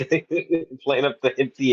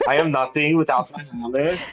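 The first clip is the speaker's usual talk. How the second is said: slight put-on French accent. Discussing a character's line, repeating it in a put-on french accent. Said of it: "I can't even do the accent".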